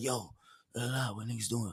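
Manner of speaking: very quiet, low mumble. Describing how a friend talks, imitating Twin's low talk. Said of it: "like I got friends that talk low".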